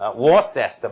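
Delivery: normal talking voice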